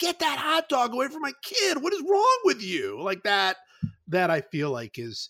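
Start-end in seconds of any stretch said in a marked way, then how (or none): 0.0-3.0 very high, shrill, scolding screaming. Picturing a mom yelling at someone who shot a hot dog to her kid, imitating a screaming mom. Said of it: "like just screaming".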